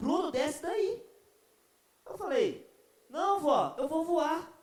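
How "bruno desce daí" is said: put-on grandmother voice, calling out mildly. Retelling how grandma shouted up at her grandson on a ledge, imitating grandma shouting. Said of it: "e começou a gritar".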